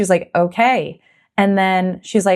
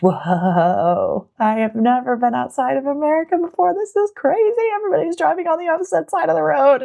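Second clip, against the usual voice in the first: dazed, buzzy, delirious wonder, high and swooping; 8 semitones higher than usual. Retelling walking around after landing in Auckland: imitating her delirious, buzzy self. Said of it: "super delirious from the flight and just really buzzy".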